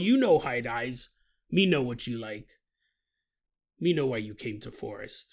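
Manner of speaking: put-on forest cryptid creature voice. Describing a meeting with a cryptid in the forest, cryptid creature voice. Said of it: "He's all".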